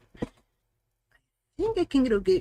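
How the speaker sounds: high stuttering cartoon voice. Talking through a calibration setup, slipping into a Porky Pig voice. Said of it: "like the Porky Pig voice there".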